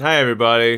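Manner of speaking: talking through a mouthful of food, chewing. Opening the show with a mouthful of tasty treats, talking with mouth full. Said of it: "start with a mouthful of tasty treats".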